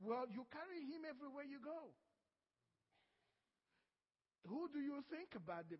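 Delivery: gentle, soft-toned voice. The speaker recounts what God said to them about him, retelling God speaking gently. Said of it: "God gently said".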